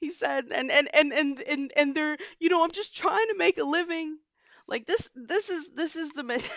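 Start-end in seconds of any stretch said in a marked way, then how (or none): 0.5-4.2 put-on crying, higher pitch. Retelling what a hedge fund manager said on tv: imitating a crying hedge fund manager. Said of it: "a hedge fund manager was literally crying on T V like".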